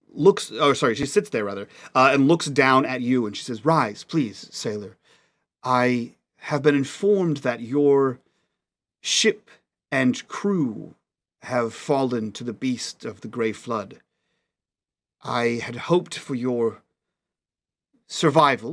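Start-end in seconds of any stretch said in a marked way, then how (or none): 3.7-18.8 much softer voice, slow and unhurried. Voicing a young queen greeting a kneeling sailor: much softer voice. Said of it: "a much softer voice than you would have".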